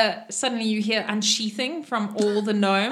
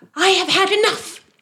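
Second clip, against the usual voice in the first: fed-up, shrill, loud, very high angry shout; 10 semitones higher, 6 dB louder than usual. Voicing a character climbing out of a pool: shouting. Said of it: "she shouts".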